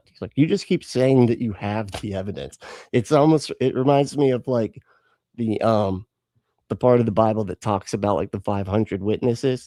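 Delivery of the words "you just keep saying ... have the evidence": plain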